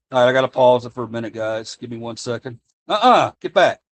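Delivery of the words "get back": loud, high-pitched scolding yell. Pausing the video to deal with a beagle: screaming at a dog. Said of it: "I'm screaming at my beagle".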